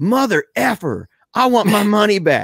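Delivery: acted-out angry outburst, high furious shout. Retelling how a man at a viewing stood up in the back, mock-angry outburst. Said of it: "he was so mad about it".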